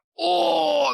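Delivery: very high, squeaky, pained whimpering whinge.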